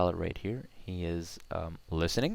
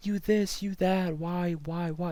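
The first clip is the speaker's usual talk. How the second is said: angry ranting voice rising to a very high pitch; 12 semitones higher, 4 dB louder than usual. Explaining intonation by showing how angry voices rise, demonstrating an angry raised voice. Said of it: "their voice tends to go way higher".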